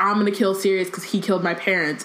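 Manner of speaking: ordinary talk, nothing marked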